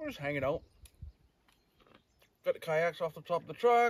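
talking with mouth full. Telling the guys about their camp setup, talking with a mouthful of peanuts. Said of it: "I'm talking with a mouthful of peanuts".

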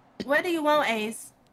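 loud, fed-up, short-tempered, irritated voice. Answering a call from another player in the game: irritated tone. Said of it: "why you saying like that".

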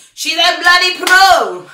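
really loud. Filming herself before showing how she packs: very loud. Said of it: "I'm very loud".

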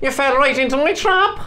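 put-on Cork accent, pitched very high. Trying out voices for a baddie's line: cork accent. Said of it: "what about Cork?".

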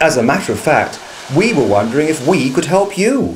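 ordinary delivery

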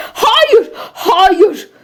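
shouting. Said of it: "diye bağırdığını".

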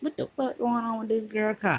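ordinary delivery

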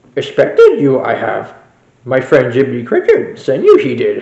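put-on wise little alien voice. Answering another character who asks for help: Yoda voice. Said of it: "Master Yoda, I am".

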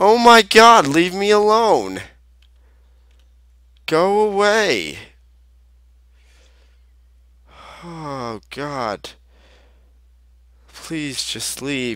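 frightened, high-pitched, swooping, pleading tone. Gamer begs a figure in the game to go away, scared and pleading. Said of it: "You're scaring the shiz out of me".

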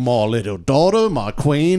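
mocking, put-on English accent. Mocking how English people talk about their families: imitating an English person. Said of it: "And then they go".

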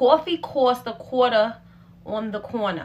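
thick, loud New York Brooklyn accent. Speaker trying out a thick New York accent. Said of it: "I could already feel the Brooklyn just oozing out".

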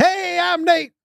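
lively put-on delivery. Reading a listener's message aloud with a little energy: energetic voice reading Nate's message. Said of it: "I was giving Nate a little energy".

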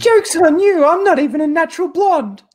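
put-on very high, loud, terrible New York accent. Taking a turn when friends ask for a Harley accent; Harley Quinn accent. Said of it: "give us your best Harley accent".

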